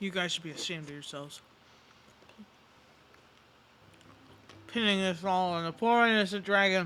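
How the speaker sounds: speaking with a full mouth. Scolding the others for blaming the dragon, talking with mouth full. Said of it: "I say with my mouth full".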